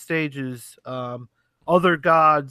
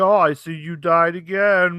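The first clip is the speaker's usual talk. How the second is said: slow, raised, cutting scolding tone; 4 semitones higher, 5 dB louder than usual. Retelling what the dad says each time you die: imitating a father berating. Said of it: "of course your dad berates you".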